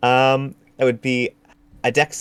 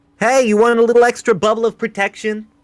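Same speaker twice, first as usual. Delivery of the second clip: very high, far-carrying yell; 10 semitones higher, 4 dB louder than usual. A player's character reaches out a hand toward Raven off the field, yelling across the field. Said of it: "I'd like to reach out my hand and yell".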